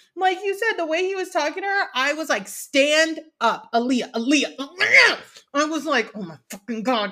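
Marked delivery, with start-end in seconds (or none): none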